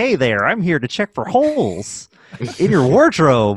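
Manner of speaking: put-on strange, swooping, sing-song voice. Retelling a movie scene where a character puts on a voice: imitating Deckard's weird voice. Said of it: "puts on this weird voice".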